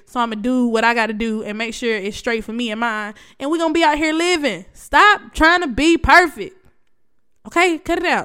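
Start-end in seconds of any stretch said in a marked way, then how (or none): 4.7-8.2 full-on, high, drawn-out shout. The speaker addresses the audience directly: yelling. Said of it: "I'm sorry I'm yelling".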